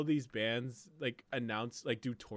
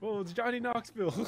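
startled, surprised squeal, very high; 10 semitones higher than usual. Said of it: "That's how he sounds".

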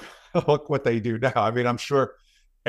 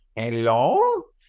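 put-on old lady voice with Spanish accent. Imitating how he answers the phone, in a put-on old lady Spanish accent. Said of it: "He puts on this voice. It's kind of like a... like a Spanish accent, I guess, but like an old lady or something".

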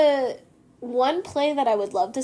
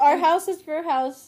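talking with mouth full, chewing; 3 semitones higher than usual. Talking to a house guest while eating a pizza: mouth full, chewing. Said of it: "Sorry, I'm eating a pizza".

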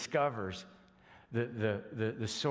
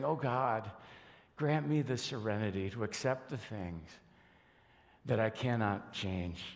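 put-on tearful whisper. The speaker pictures Mary as a mom praying to God, Mary's tearful whisper, acted out. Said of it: "fighting back tears and whispering".

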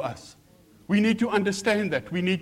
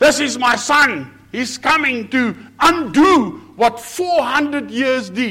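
grand, raised, big booming voice of authority and power; 6 semitones higher, 7 dB louder than usual. Retelling the heavens opening for Jesus, speaking as God in a big voice. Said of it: "God with a big voice says".

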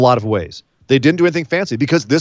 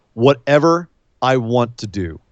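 put-on calm voice; 3 semitones lower than usual. Retelling how Roman answered a question during a match, imitating Roman's calm reply. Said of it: "Roman looks at him very calmly goes".

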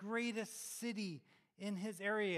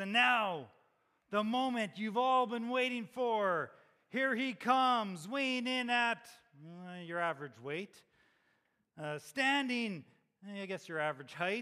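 loud, big, booming boxing-ring announcer voice; 6 dB louder than usual. Imagining Peter announcing Jesus coming in: Peter's announcer voice. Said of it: "announcing with his announcer voice".

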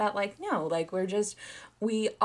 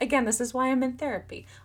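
tough-talking Italian mobster wiseguy accent; 4 semitones higher than usual. Talking about blacking out memories of a wedding, italian mobster voice. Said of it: "I sounded like an Italian mobster there".

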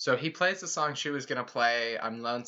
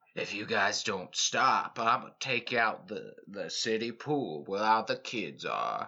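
menacing, vaguely threatening cowboy voice; 3 semitones lower than usual. Imitating a character's vaguely threatening mayor-of-the-city cowboy voice. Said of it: "threatening mayor of the city cowboy voice".

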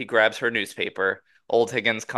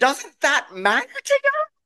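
put-on overdramatic angry voice, higher. Imagining a girlfriend scolding over a counter stain: imitating Deb overreacting. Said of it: "Take it down a notch".

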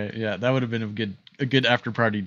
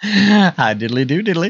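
high, booming, drawn-out character voice; 7 semitones higher, 9 dB louder than usual. Answering a greeting after being introduced as an impersonator: Ned Flanders voice. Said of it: "my favorite Ned Flanders impersonator".

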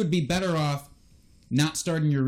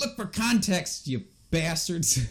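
abrupt, sudden, aggressive jabbing outburst; 3 semitones higher than usual. Giving advice on fantasy players to a co-host: suddenly aggressive. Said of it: "I got so suddenly aggressive about that".

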